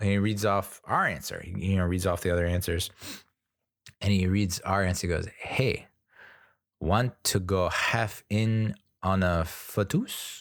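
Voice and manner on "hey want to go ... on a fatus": slow, put-on Mexican accent. Retelling how the quiz co-host read out their answer: imitating a mexican co-host. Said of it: "co-host who reads off the answers is ... Mexican".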